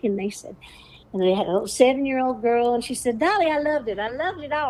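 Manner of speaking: lilting, musical delivery.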